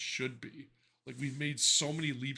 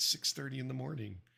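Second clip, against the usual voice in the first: hushed, soft smart-speaker-style half-whisper. Retelling the speaker's morning answer: imitating Alexa half-whispering. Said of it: "And she'll whisper".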